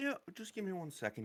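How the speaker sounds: soft, gentle voice pitched very high. A game character answering a request to get the word out, in a soft voice. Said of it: "he says in a soft voice".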